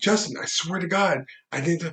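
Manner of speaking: high, put-on desperate, freaked-out panicked plea. Retelling knocking on a man's door, acting out own panic. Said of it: "I freaking fuck out".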